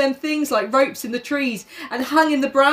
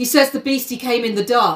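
usual speaking voice

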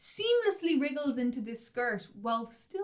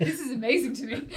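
ordinary delivery

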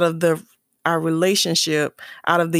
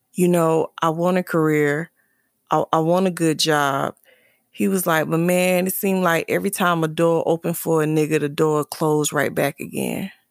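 ordinary delivery

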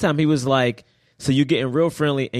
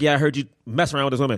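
casual, throwaway, nonchalant, offhand delivery. Retelling a movie scene where he admits the affair: imitating a nonchalant delivery. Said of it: "he said it very nonchalant".

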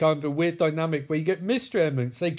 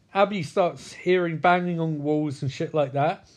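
usual speaking voice

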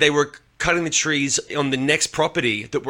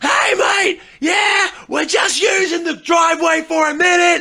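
very high-pitched, loud yelling shout; 5 dB louder than usual. Retelling what the deaf tree cutter said in the driveway, imitating someone screaming. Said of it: "Screaming at me".

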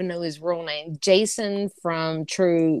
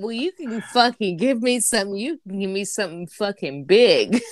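normal talking voice

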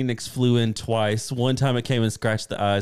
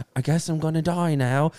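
put-on British accent, higher; 5 semitones higher than usual. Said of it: "he has that terrible of a British accent".

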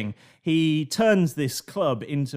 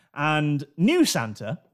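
ordinary talk, nothing marked

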